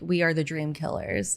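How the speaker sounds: ordinary talk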